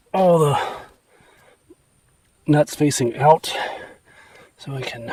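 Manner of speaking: winded, out of breath, heavy breaths between words.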